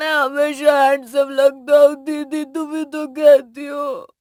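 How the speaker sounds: loud, slow crying through words. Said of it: "अब रो मत".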